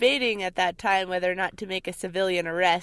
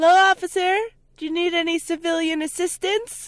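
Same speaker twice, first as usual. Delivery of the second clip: high-pitched, loud mock-polite yell. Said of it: "So we yell over to him".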